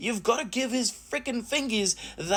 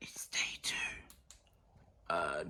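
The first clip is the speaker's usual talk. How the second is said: hushed, very quiet whisper; 11 dB quieter than usual. A YouTuber greets viewers on the morning of day two, whispering. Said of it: "don't know why I'm whispering".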